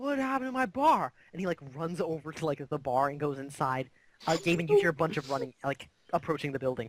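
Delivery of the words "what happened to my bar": piercing, high-pitched yell. Voicing a barman who yells on seeing his bar: yelling barman. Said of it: "the barman yells".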